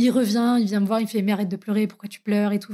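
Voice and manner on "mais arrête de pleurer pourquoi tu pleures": ordinary delivery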